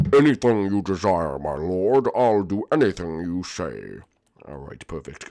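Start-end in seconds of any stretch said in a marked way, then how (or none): 0.1-4.0 low, slow, villainous henchman voice. Playing a henchman agreeing to orders from a lord, evil voice. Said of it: "lose the whole evil voice thing".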